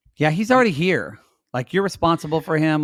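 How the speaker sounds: ordinary delivery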